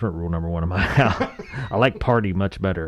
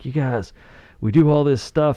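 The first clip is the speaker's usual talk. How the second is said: play-acted angry coach voice, pitched up; 7 semitones higher than usual. Retelling a college football coach stopping practice, imitating an angry coach. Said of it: "the coach gets all mad".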